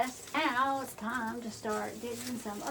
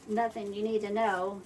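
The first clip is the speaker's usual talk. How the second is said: usual speaking voice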